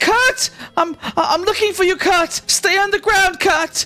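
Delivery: very high, loud yelling voice. Voicing a woman searching for her son in battle: woman yelling. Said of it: "she yells out and says".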